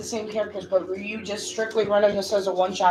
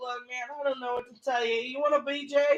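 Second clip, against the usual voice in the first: put-on burnout stoner dude voice; 3 semitones higher, 5 dB quieter than usual. Speaker imagines someone answering a question, imitating a stoner. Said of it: "in that stoner voice".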